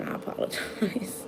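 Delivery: slow, slowed-down whispered delivery. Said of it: "gonna try to slow it down".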